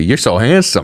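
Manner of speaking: gushing, fond, doting grandmother-style voice. Imitating how Donald Trump spoke to a fighter: like a grandma. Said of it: "He was talking the way, like, your grandma talks to you".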